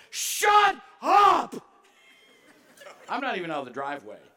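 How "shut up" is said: shrill, full-throated scream at top of voice. Retelling yelling at kids climbing over the van: retelling a loud yell. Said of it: "I yell to the top of my voice".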